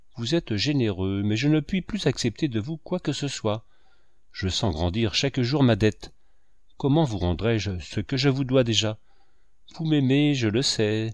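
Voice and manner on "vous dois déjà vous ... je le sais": ordinary delivery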